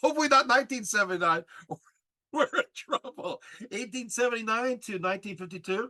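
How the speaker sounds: giggly, half-laughing through the words. Correcting a misspoken year while presenting, laughing while talking. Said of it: "laughing up a store over here".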